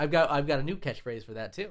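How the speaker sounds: ordinary delivery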